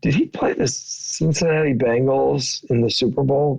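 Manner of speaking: put-on, leaning-in stage whisper. Retelling what Roger leaned over and said at dinner: imitating Roger's stage whisper. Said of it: "kinda stage whispers to me".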